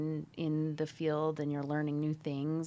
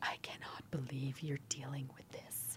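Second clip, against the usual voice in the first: mock appalled, horrified, hushed near-whisper; 2 semitones lower, 10 dB quieter than usual. Retelling what a woman said on hearing about the job; imitating someone horrified. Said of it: "in horror".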